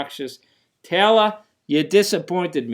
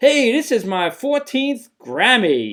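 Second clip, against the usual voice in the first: put-on smug, arrogant bragging tone, pitched up; 7 semitones higher, 3 dB louder than usual. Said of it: "she was also so arrogant and so unhumbling".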